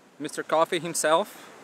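plain

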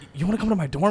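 high, loud, overdone, stammering, extra-weird delivery. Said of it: "He makes it so much more weird".

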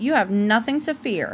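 ordinary delivery

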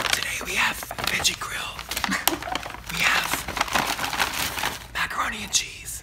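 slow, soft, drawn-out whispered ASMR murmur. Demonstrating asmr while talking about favorite sounds: whispering.

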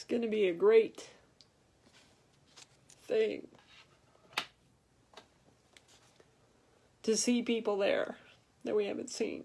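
teary, emotional voice, close to crying. Talking about heaven, the speaker finds themselves getting teary. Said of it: "I don't know why I'm getting teary right now".

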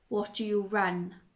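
usual speaking voice

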